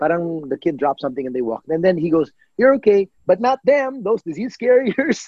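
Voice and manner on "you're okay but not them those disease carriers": mock, high-pitched, rude shouting. Retelling a man pointing and shouting at the group: imitating a man shouting. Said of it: "yung sigaw niyang yun".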